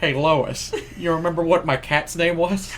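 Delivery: nasal Rhode Island cartoon voice. After hearing how H.P. Lovecraft likely sounded, playing him in a Peter Griffin voice. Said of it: "likely sounded just like Peter Griffin".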